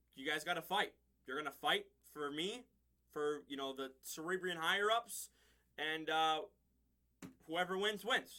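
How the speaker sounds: plain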